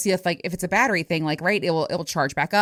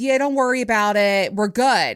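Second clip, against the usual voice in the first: put-on dazed, spaced-out voice; 3 semitones higher, 3 dB louder than usual. Retelling a fender-bender, the speaker imitates the other driver; imitating a dazed driver. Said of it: "he's kind of out of it".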